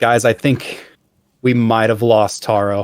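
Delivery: ordinary delivery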